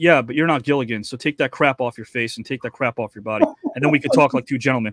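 mock-deadpan delivery. Speaker retells what a man said to him, retelling a deadpan line. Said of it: "he deadpans and he looks at me".

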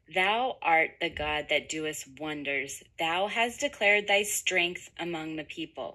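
ordinary talk

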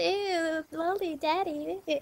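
very slow, high, put-on valley girl drawl. Mocking how Gen Z girls here talk, in a little valley girl voice. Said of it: "Anyone with a little valley girl voice".

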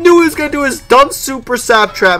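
frustrated, high, loud, whining, crying wail.

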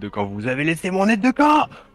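acted furious shout. Recounting a game scene where their character hurls someone across the room, reenacting a furious shout. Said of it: "je le balance derrière la pièce en hurlant".

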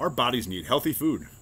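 ordinary talk

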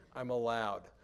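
ordinary talk, nothing marked

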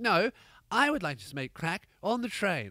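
put-on English accent. Acting out a woman's reply about smoking on the train, put-on english accent. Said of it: "I don't know why she has an English accent".

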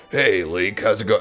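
put-on low character voice. Speaker shows how they'd greet Link, in Solid Snake voice. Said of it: "go back to my Solid Snake voice".

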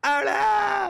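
high, loud, dismayed shout.

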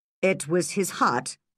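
ordinary delivery

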